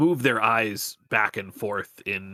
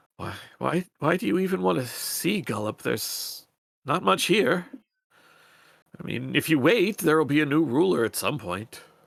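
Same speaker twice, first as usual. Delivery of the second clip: sorrowful, mournful, pitched-up sad voice; 6 semitones higher than usual. Narrating a scene, the speaker voices a character answering the listeners in a sad voice. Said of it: "they sort of say in in their sort of same sad voice".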